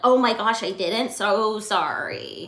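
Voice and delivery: very slow, drawn-out, sarcastic-sounding delivery. Retelling own past apology for a forgotten text: imitating own sarcastic-sounding apology. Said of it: "That sounded sarcastic".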